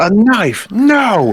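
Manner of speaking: comic in-character outburst, high and loud yelp.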